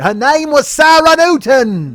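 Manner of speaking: very loud, very slow, high, drawn-out Australian accent. Naming a listener from australia: australian accent. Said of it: "she's from Australia, so I gotta say".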